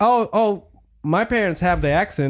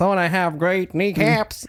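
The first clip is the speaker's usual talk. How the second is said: put-on American Southern accent. Imagining a cartoon character as a kid, Peter Griffin in Southern accent. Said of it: "speaking like He's not from the South".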